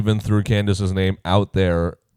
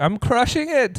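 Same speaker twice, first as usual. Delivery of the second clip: put-on squeaky, very high-pitched, vaguely Irish accent. Retelling what a player said mid-game, in a vaguely Irish-sounding accent. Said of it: "Is that, is that Irish?".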